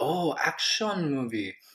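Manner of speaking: bad, awful, put-on, high-pitched Korean accent. Imitating people in Korea who finally understand: awful Korean accent. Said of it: "that's my awful accent".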